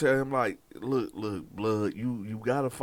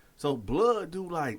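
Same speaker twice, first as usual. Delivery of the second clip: ordinary talk, nothing marked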